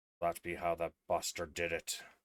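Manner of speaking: muttering under her breath. Voicing a character who mutters to herself: muttering under her breath. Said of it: "you can kind of hear under her breath".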